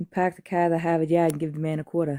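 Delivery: put-on Boston accent. Trying out accents with others, asked for a Boston accent. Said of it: "how about a Boston accent?".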